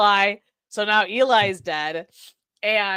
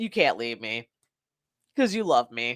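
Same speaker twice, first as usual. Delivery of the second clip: mock brash, full-of-it, cocky, self-assured swagger; 9 semitones lower, 5 dB quieter than usual. Retelling a movie character's line to the woman leaving him: imitating a cocky man. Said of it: "the cockiness of this man".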